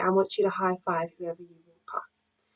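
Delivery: normal talking voice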